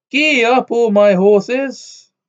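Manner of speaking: very high, loud, gleeful happy holler. Reading a story aloud, a happy farmer whipping his horses: shouting happily. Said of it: "kept on cracking his whip and shouting".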